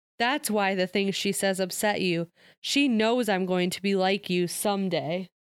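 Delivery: ordinary delivery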